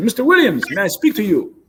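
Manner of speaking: put-on thick Nigerian accent. Recounting what a man who came up to his cage said, thick Nigerian accent. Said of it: "he had a thick Nigerian accent".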